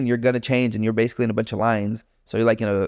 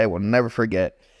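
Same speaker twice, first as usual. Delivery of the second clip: normal talking voice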